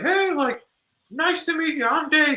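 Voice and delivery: very high-pitched voice. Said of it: "That's how he talks?".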